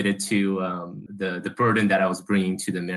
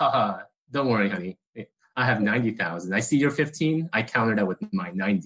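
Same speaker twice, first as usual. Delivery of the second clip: ordinary talk, nothing marked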